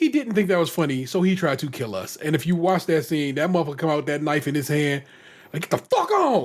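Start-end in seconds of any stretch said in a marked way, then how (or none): 5.7-6.5 furious, wildly mad yelling, pitched very high. Retelling how a barber came out with a knife: imitating someone wildly mad. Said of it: "you were wildly mad".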